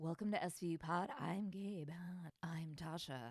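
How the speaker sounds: public-radio announcer voice. Co-host redoes the podcast intro mockingly in an NPR radio-host voice. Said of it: "we just did that intro really NPR".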